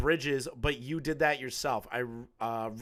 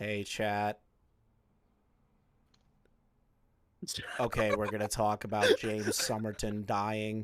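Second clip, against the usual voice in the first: put-on very slow talk, much lower, quieter; 5 semitones lower, 3 dB quieter than usual. Mocking how a streamer talks to chat, imitating a very slow speaker. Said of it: "gotta be one minute intervals between the sentences".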